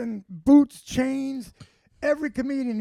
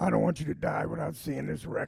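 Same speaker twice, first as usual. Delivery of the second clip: hoarse, raspy whisper; 6 semitones lower, 5 dB quieter than usual. Retelling a line left on an answering machine: imitating brother's raspy voice. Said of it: "He had that raspy voice".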